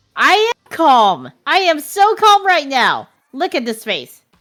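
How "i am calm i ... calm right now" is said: excited, louder and much slower. Before going to them, a character insists on being calm: excited, not calm. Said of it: "And it's totally not calm".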